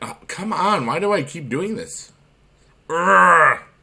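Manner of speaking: exasperated groan. The speaker keeps repeating the same mistake; frustrated. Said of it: "that was me being frustrated".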